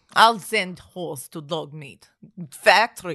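booming, deep German vampire accent. Repeating the line in a voice mixing Colonel Klink and Count Dracula. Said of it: "it sounded like a cross between colonel clink and count dracula".

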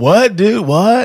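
high, beach-style surfer bro voice. Speaker retells a phone call with a stranger, in a surfer dude voice. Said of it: "it sounded like a surfer dude".

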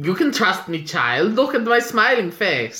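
creepy, coaxing, ingratiating voice. Recapping a show, voicing Klaus coaxing a child, in a mock-creepy Klaus voice. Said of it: "Why are you both being Hansel and Gretel?".

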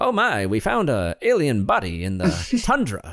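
mock wooden, stilted 1950s film acting. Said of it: "the acting might be a little wooden".

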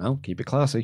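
mock mutter under breath. Recapping a wrestling segment, retelling a reply made under the breath. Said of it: "replied under his breath".

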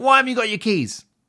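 restrained, mild yell, pitched very high. The speaker recounts yelling at their son for ringing the doorbell; retelling a mild yell. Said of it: "yelled, not outrageously".

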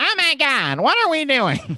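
very high, shrill exclamation, drawn-out. Recalling being shocked by what her voice sounded like: Kat Dennings voice. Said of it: "shocked when she's like".

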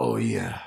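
deep, very low, try-hard put-on sexy voice. Speaker demonstrating the voice they use during sex: put-on sexy voice. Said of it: "What's this voice?".

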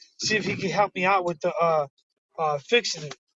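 plain

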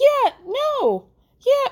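very high cartoonish voice. Retelling how a man answered her, in a high Mickey Mouse voice. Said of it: "in that high Mickey Mouse voice".

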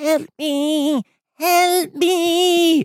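very high, very slow, tiny, shrill, squeaky scream. Describing a film scene, the speaker voices the trapped fly: tiny screaming fly voice. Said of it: "screaming and this tiny fly voice".

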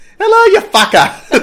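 fake Massachusetts accent, high and loud. Joking about a Massachusetts Slurpee after being told how the accent sounds: put-on Massachusetts accent. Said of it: "I wish I could do a Massachusetts accent".

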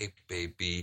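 hushed, breathy, barely audible half-whisper. Imitating the way she talks to him: imitating a half-whispery voice. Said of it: "the very whispery".

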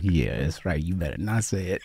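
mock teasing, words broken by laughter and chuckles. Retelling how a costar taunted them about a line: imitating someone laughing while talking. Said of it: "He's laughing".

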